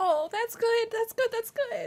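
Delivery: high, choked-up, snotty sobbing voice. Reacting to what he's hearing while crying hard. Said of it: "I'm crying so hard".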